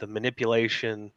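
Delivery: ordinary talk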